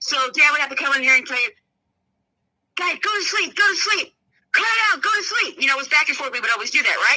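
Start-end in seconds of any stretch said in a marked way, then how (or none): 2.8-5.6 stern, high-pitched yelling. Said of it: "parents would yell at us".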